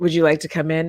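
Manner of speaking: low, throaty, husky voice. Reading from an old story to show what the word means: husky voice. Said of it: "Huskily is like this".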